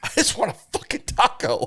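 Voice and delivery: fed-up, wits'-end freak-out outburst. Retelling punching the steering wheel in the car at Taco Bell: retelling a freak-out. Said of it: "I just had to freak out".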